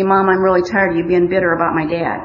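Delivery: ordinary delivery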